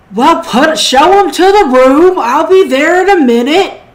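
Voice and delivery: high, loud gruff voice. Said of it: "a gruff voice that say".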